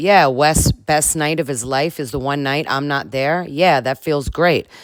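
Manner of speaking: usual speaking voice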